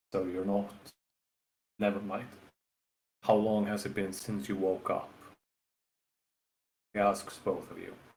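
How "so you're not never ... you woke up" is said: hushed half-whisper, pulled in close. A storyteller voices a man asking both listeners a question: hushed voice. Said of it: "In kind of a hushed voice".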